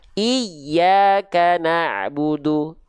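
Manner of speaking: doubled yy in iyyaka stressed hard and high. Explaining stress on Iyyaka na'budu: doubled y in iyyaka pressed hard. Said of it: "ditekan lebih kuat lagi ... nadanya seolah lebih tinggi daripada nada sekitarnya".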